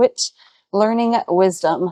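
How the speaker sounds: plain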